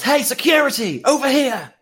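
very high, shrill, loud yell. A game master voices a stranger who spots the group: yelling. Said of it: "and yells".

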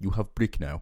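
odd made-up put-on accent, sounds South African. Retelling what a phone advert says, in a weird put-on accent. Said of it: "I just gave myself a weird accent".

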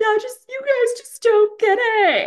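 very high, loud fake crying with a pout. Retelling a cast member's imitation of Kristen: mock crying imitation of Kristen. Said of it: "fake crying and pouting".

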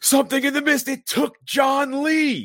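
very loud, very high, shrill, swooping scream. Retelling a movie scene where a bleeding man runs in: imitating someone screaming. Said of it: "runs in the store and screams".

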